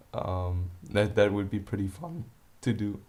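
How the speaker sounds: voice cracking. Asking viewers to comment if they want to see him dogfight his girlfriend: voice crack. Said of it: "excuse the voice crack".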